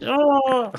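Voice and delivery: very high, squeaky yelp. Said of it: "using a higher pitched voice".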